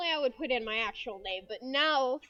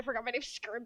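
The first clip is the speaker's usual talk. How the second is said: ordinary talk, nothing marked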